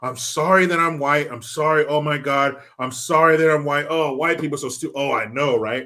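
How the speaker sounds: put-on apologetic, weak-sounding voice. Mocking a movie character while retelling scenes: mocking Ezra as an apologetic weakling. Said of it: "an apologetic fucking weakling".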